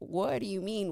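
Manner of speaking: put-on alarmed, panicky tone. Retelling a dorm fight, imitating own panicked question. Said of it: "So I'm panicking".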